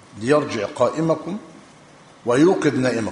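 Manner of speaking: ordinary talk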